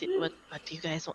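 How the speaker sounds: put-on whisper. Voicing a character who asks the others what they want: whispering.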